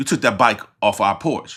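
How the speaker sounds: ordinary delivery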